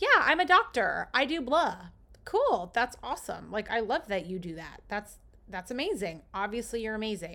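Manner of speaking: happy, bright, loud, sing-song voice with a smile. Showing how to state your profession like you're happy, in a happy, smiling voice. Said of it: "say it like you're happy. put on a smile".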